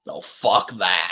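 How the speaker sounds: rough, very low, deep gruff bass voice. Retelling a man who turns around and starts bashing, in a deep gruff voice. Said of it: "in this real deep gruff voice".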